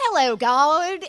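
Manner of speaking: put-on overdone thick Southern accent, high and loud. Imitating a movie character's monologue to God: overdone Reese Witherspoon Southern accent. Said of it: "she uses her actual Southern accent, but she gets, like, she overdoes it, so it feels like a caricature where she's like".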